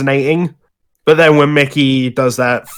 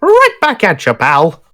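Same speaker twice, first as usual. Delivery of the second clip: high put-on cartoon mouse voice, buddy-buddy and friendly; 7 semitones higher than usual. Quoting a wholesome moment between Yoda and Mickey: Mickey Mouse voice. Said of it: "not a bad Mickey voice".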